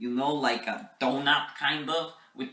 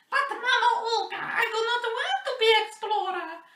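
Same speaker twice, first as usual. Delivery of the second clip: put-on very high little Russian boy voice; 3 dB louder than usual. Telling a made-up backstory, quoting what they told their mother, in a little Russian boy voice. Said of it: "this is my little Russian boy voice".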